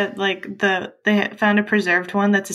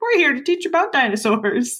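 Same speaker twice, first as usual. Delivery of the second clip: put-on slow, high children's TV puppet voice; 5 semitones higher than usual. Picturing two names as puppets teaching dinosaurs: Sesame Street puppet voice. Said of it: "they sound like puppet names on, like, Sesame Street".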